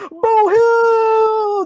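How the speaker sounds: very high, loud call, Hill stretched out. Reading out a viewer's name the way Alex would: imitating Alex. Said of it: "But I gotta say it like Alex".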